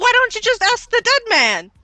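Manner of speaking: frantic, panicked freak-out, very high pitch, very loud. Arguing with a guard about a dead man: freaking out in character. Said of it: "freaking out as a cover".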